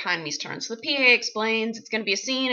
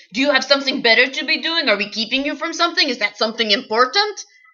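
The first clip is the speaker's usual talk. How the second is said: loud, shouted, yelling scold; 3 semitones higher, 5 dB louder than usual. Retelling being scolded at an audition: imitating Tommy Wiseau yelling. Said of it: "I just got yelled at by Tommy Wiseau".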